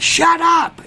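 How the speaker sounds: put-on scream. Speaker retells a dog owner turning to scream at the dog, retelling a scream. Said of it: "the owner turns and is like screaming like".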